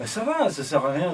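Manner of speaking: put-on drunken, sozzled Irish accent. Game narrator voicing a man who gets up in front of the players, Irish accent. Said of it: "avec un accent irlandais".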